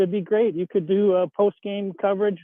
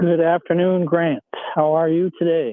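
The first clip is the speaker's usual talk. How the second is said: lower tone, louder; 2 semitones lower, 4 dB louder than usual. Caller on a sports radio show greets the host; lower-toned voice. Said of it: "I'm using my lower tone voice today".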